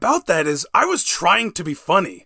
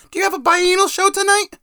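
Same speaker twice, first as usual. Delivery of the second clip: deliberately bad, very high-pitched mom voice; 10 semitones higher than usual. Quoting what his mom used to ask: worst impression of his mom. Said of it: "I also do the worst impression of my mom".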